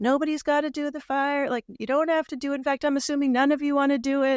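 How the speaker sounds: light southern Kentucky drawl, pitched high. Retelling what a man from Kentucky tells everyone before the firewalk, with a slight Southern drawl. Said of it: "So he'll have a bit of a drawl".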